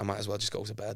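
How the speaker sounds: soft, mumbled mutter under the breath. Retelling a remark said to oneself while performing to a quiet crowd: muttering under breath. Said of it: "under my breath, I went".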